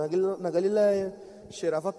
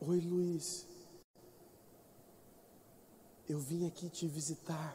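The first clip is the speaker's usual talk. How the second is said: barely audible hush, very quiet and very slow; 2 semitones lower, 14 dB quieter than usual. Retelling a hospital visitor's greeting: imitating someone speaking softly. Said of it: "Falando baixinho".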